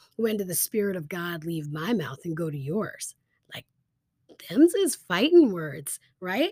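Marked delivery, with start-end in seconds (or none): none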